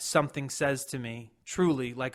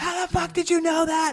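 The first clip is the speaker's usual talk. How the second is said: shrill, very high, top-of-lungs screaming; 6 dB louder than usual. Retelling how people in the car reacted: imitating people screaming loudly. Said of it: "screaming at the top of their lungs".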